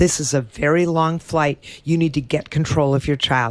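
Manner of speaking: plain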